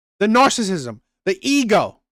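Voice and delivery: ordinary talk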